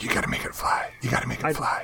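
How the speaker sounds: insistent, urging whisper, very close. Retelling how Lee kept urging to make it fly: imitating Lee's whisper. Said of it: "Lee just kept whispering in my ear".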